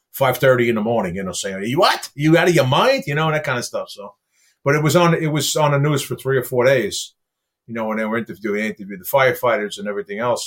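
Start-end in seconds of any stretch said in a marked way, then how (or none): 1.8-3.1 acted-out yell, higher pitch. Recalling hearing verdict news while driving to work, retelling a yell at the radio. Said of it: "I'm yelling at the radio".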